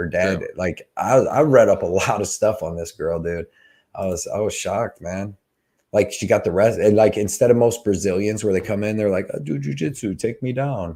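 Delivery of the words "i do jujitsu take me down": put-on Brazilian Portuguese accent on English. Describing how most brazilian fighters talk, in a brazilian accent impression. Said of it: "That was the best Bra- Brazilian impression I ever heard".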